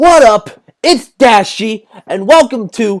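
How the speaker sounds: high, loud, drawn-out scream, show stretched out. After warning listeners to turn their volumes down, do a screamed Dashy impression. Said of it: "I'm gonna scream and someone's gonna think".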